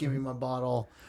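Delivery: put-on drunken voice. Retelling a drunken guy walking off stage: imitating a drunken guy. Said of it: "that drunken guy".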